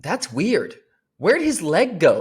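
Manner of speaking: mock swooping child's shriek, very high and loud. Retelling the speaker's son's question about a man on crutches, retelling a scream. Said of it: "he's like screaming it as loud as possible".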